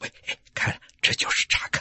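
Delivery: soft hushed whisper. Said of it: "他们小声地说".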